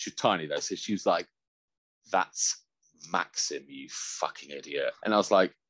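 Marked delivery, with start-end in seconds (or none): 2.1-4.9 mock scornful, slow, disdainful, withering tone. Retelling an ex's reply at a festival: imitating Kay's disdainful reply. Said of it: "with a proper look of disdain".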